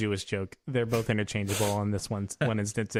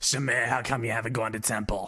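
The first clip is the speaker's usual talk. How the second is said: put-on smoker's voice, motherly. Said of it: "add a smoker's voice to it".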